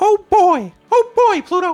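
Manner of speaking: high, loud and stretched out. Doing the voice he always did for his son: Mickey Mouse voice. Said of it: "do a Mickey Mouse voice for my son. Let's see if we can still do it".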